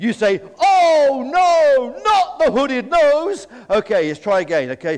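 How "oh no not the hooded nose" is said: gushing, eager, very high-pitched and very slow. Showing listeners how to call out their response line, enthusiastic. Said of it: "but you say it with more enthusiasm".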